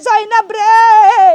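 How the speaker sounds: loud, slow, tearful pleading, weeping.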